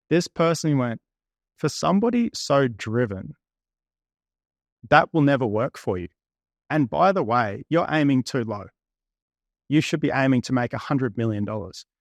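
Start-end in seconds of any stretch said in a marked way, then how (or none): none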